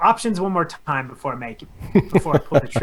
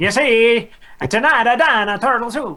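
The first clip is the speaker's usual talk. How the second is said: put-on obnoxious old-timey 1950s guy voice, higher, louder; 8 semitones higher, 5 dB louder than usual. Joking around on the episode, the speaker does a 1950s jackass voice. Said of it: "some jackass from the 50s".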